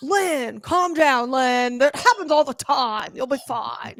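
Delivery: put-on bro-style voice. Doing an impression of her husband as a bro: imitating her husband. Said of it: "when you did one of him".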